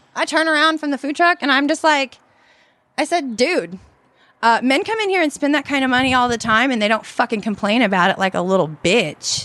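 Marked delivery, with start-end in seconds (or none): none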